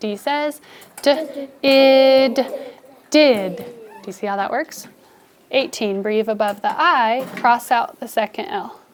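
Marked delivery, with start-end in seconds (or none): 1.0-3.6 loud phonics blending of did, id drawn out. Showing students how to sound out a word: sounding out a word. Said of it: "sounding it out".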